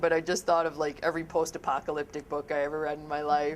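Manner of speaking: words spoken while laughing through them. Speaker apologizes mid-explanation about communities, laughing while talking. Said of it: "Sorry, I'm laughing".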